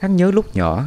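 plain

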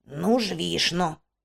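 grumbling sarcastically. Narrator reading a character's reply to a companion's urge to leave, sarcastic grumble. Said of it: "саркастично буркнув Коен".

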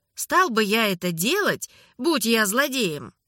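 ordinary delivery

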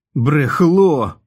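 loud, high-pitched yelled outburst. A character struggling hard shouts at another man, shouted. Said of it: "крикнув Гек".

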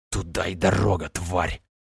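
annoyed, irritated words hissed out, low voice. A character, splattered with a dead temptress's remains, spits and speaks: hissing. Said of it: "прошипел".

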